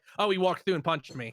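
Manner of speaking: usual speaking voice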